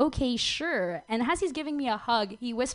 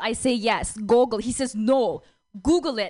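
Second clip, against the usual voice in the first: put-on woman's voice with a Russian accent; 4 dB louder than usual. A newcomer to San Francisco retells meeting a man; Russian woman accent. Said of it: "It's a Russian woman who just moved".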